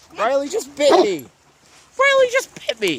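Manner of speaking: very high, swooping, animated voice. Telling others nearby they just got bitten and hurt, in a high voice. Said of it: "that was a high voice".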